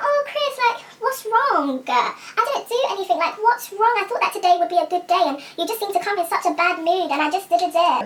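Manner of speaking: play-acted high, naive, guileless, clueless innocence. Retelling her own question to her upset date: imitating her own naive tone. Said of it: "naive way".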